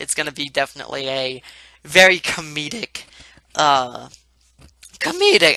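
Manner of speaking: voice keeps breaking mid-word, cracking. Speaker describes an upcoming comedic side project to viewers, voice cracking. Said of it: "I don't know why my voice is cracking so much".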